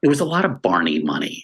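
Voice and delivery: hushed whispering aside. A speaker describing the Wishbone sets, whispering. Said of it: "I'm whispering it like so that no one else will hear us".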